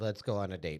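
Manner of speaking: ordinary talk, nothing marked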